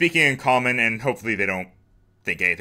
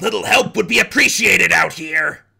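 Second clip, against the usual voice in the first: slightly strange put-on goblin voice, high and creaky; 5 semitones higher than usual. A player pretends to call out, in a slightly strange goblin voice. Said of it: "in like a slightly strange goblin voice".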